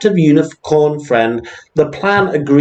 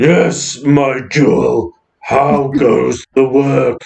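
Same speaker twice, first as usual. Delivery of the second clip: deep, throaty dragon monster voice, very slow. Narrator voicing Danny's reply to Vista in a deep, throaty monster voice. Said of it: "replies in a deep, throaty monster voice".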